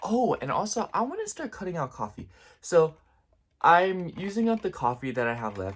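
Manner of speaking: out of breath, puffing. Continuing a casual chat after admitting being out of breath, out of breath. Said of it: "I'm out of breath".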